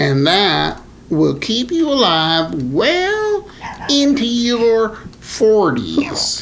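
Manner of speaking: high, slow, silly put-on voice. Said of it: "what, what voice was that".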